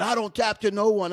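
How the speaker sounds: acted, high-pitched shouting yell. Retelling a fighter with a snapped arm refusing to tap: imitating someone yelling.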